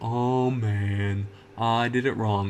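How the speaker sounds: dejected, very slow drawl, "man" stretched out. Math teacher showing how a student might feel about an answer: glum Eeyore impression. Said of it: "That's my Eeyore impression".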